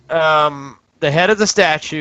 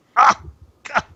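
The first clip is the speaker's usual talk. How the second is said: put-on high-pitched elderly man's voice; 9 semitones higher than usual. Voicing a voice the players hear in the scene, old man voice. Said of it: "It sounds like an old man".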